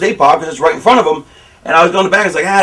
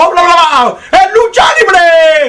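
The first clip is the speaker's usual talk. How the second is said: put-on excited commentator scream, very high, slow, drawn out; 11 semitones higher, 4 dB louder than usual. Retelling a wrestling commentator heard on TV: imitating a screaming commentator. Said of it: "And the guy's screaming".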